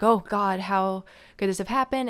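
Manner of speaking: put-on panicked outburst. Retelling how a character reacts after finding a body: imitating Norman freaking out. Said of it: "he freaks out. He's definitely like".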